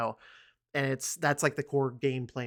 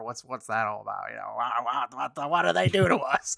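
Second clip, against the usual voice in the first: put-on puzzled tone, louder; 6 dB louder than usual. Imitating a listener who hasn't played the game: Tim voice. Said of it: "I'm drifting into Tim voice".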